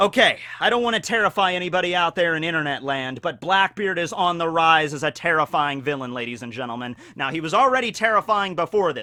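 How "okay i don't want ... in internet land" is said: usual speaking voice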